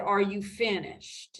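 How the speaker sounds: condescending, patronizing, talking-down tone. Retelling what Pastor Granberry said at the meeting: imitating a condescending question. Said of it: "got up so condescendingly and said".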